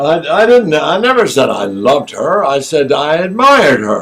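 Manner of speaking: loud theatrical delivery. Acting a quarrel scene on a stage: projected stage voice. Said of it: "talking like this to each other".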